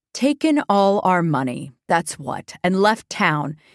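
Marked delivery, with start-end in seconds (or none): none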